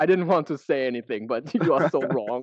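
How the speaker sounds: put-on heavy German accent. Retelling what a German man standing next to him said, in a thick German accent. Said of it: "in like a really thick German accent".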